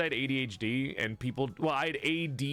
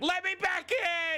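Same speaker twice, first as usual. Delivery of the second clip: put-on tearful begging voice, higher. Retelling being locked out and banging on the door: retelling own crying plea. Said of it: "I actually started to cry seeing this dog".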